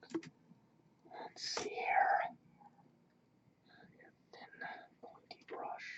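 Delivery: very slow, drawn-out, hushed whispered murmur. Adding a last painted detail, the speaker looks for a thin pointy brush, whispering. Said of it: "Don't know why I'm whispering".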